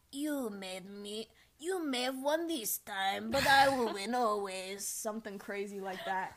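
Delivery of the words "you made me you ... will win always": put-on loud, slow Russian accent. Describing a game she plays, the speaker quotes the red witch: red witch's Russian accent. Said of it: "She has like a Russian accent".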